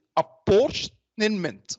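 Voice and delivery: slow, careful, word-by-word pronunciation. Introducing today's topic, the speaker says apportionment as a slow careful pronunciation. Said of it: "I will just pronounce it slowly".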